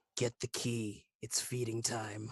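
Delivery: quiet, soft half-whisper under the breath. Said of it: "I just whisper to her".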